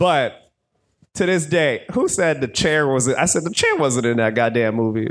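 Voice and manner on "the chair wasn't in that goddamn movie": usual speaking voice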